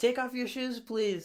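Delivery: high-pitched, flustered, freaked-out delivery. Retelling how a restaurant lady reacted to shoes on tatami: imitating someone freaking out. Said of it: "spazzed out, like".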